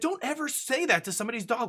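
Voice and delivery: indignant scolding voice. Retelling how a woman got angry at him for what he called a dog, mock-angry scolding. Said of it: "She's like".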